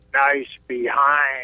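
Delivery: voice dropped as low as it can go. Telling a story about the brother's remark in the woods: imitating his deepest voice. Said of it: "in like the deepest voice he could make".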